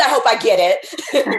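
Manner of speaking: plain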